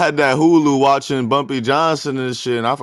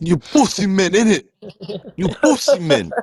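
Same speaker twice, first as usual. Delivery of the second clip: put-on Jamaican English accent; 9 semitones higher than usual. Riffing on slang that is hard to understand, in a jamaican english accent. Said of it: "that Jamaican English accent".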